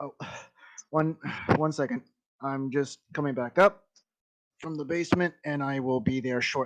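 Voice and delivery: winded, panting, huffing and puffing. Voicing a lord hurrying up from the basement: huffing and puffing. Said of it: "huffing and puffing".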